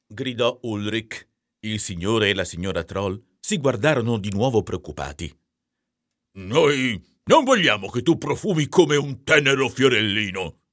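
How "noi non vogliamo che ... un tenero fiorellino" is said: grunted, grunting, pitched-up voice. A narrator reads Mr. Troll answering his son Ulrich, grunting. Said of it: "grugnì il signor troll".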